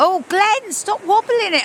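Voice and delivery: playful, high-pitched squealing.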